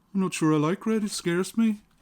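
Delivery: poor fake Birmingham accent. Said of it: "me trying a very bad Brummie accent".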